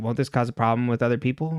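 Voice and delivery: ordinary delivery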